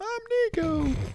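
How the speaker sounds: voice pushed up very high, pitched way up. Mocking a co-host's voice as too high: imitating Nico's high voice. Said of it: "his octaves, they're a little too high".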